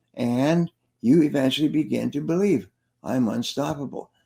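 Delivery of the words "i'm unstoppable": ordinary talk, nothing marked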